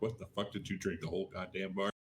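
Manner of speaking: deep voice. Retelling what grandma said at Thanksgiving dinner: imitating grandma in a deep voice. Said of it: "Did he really say it with that deep of voice".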